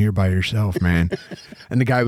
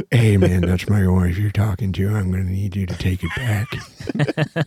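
downbeat tough-guy character voice; 3 semitones lower than usual. Retelling what a father said to a heckler, sad Clint Eastwood voice. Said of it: "He got sad Clint Eastwood?".

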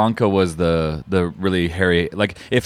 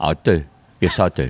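put-on cockney movie-star voice, lower; 5 semitones lower than usual. Answering whether they can do a Michael Caine: Michael Caine voice. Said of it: "Do you do a Michael Caine?".

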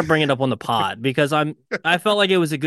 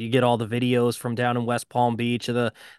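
normal talking voice

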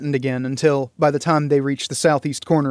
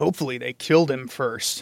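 revolted, disgusted tone, quieter; 5 dB quieter than usual. Raedric reacts to the finding of a beheaded corpse, with revulsion. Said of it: "his tone carrying the same revulsion".

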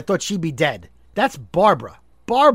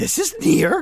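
high, pitched-up, furry puppet monster voice; 9 semitones higher than usual. Telling someone about the cartoon voices you did as a child, demonstrate your Grover impression. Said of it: "And I do a Grover".

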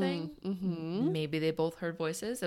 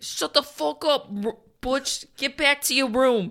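put-on Long Island accent; 8 semitones higher, 9 dB louder than usual. Acting out a dad answering his kid, in a put-on Long Island accent. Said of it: "what's like a Long Island accent?".

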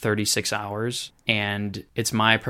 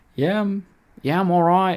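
very high, loud put-on Australian accent; 10 semitones higher, 7 dB louder than usual. Retelling a conversation, speaker voices a man's reply: put-on australian accent. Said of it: "with his Australian accent".

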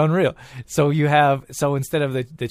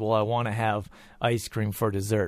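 plain

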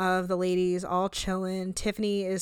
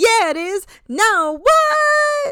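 put-on very high, very loud, slurred drunken babble; 13 semitones higher, 8 dB louder than usual. Recounting how Tiffany answered Brandy M while very drunk, imitating drunk Tiffany. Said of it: "so drunk she can't even say the N-word".

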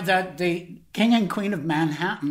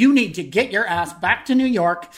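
play-acted stern, no-nonsense scolding; 3 dB louder than usual. Retelling own words on a phone call: retelling own words as a stern mother. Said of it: "like a stern mother".

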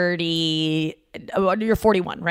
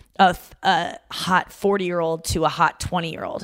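ordinary delivery

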